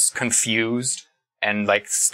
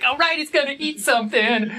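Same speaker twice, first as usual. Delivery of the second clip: very high-pitched, eager, excited creature cry. Narrator voicing the creatures in the shadows: excited creature voice. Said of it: "change pitch to an excited".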